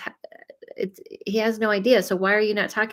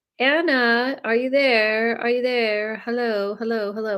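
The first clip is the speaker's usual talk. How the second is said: horrible fake English accent with a stretched word; 3 semitones higher than usual. Calling out to someone on the line who isn't answering, horrible put-on English accent. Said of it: "Why do I go to my English voice?".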